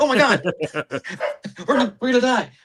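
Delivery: shrill, very high-pitched, panicked cry. Retelling a woman during an earthquake, imitating panicked speech. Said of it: "So she panicked".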